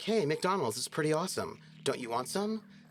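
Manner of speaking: relaxed, casual, friendly announcer voice. Explaining the current announcer trend, demo a casual cool-friend announcer voice. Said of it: "The fashion in announcer voice is like like your cool friend".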